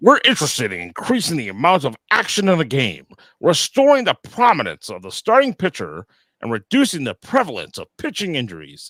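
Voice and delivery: very loud, swooping put-on official voice. Reading a quoted statement aloud to listeners, in a put-on voice for the quote. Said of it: "I got to do the voice for this part right here".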